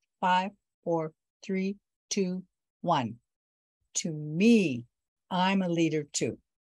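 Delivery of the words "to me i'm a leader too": strong clear voice, much slower. After a countdown, the speaker leads a group to repeat an affirmation, in a strong, clear voice. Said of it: "in a strong, clear voice".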